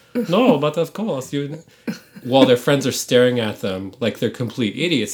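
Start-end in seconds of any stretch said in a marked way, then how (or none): 0.3-1.6 put-on prim German accent, pitched up. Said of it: "slip into German accents".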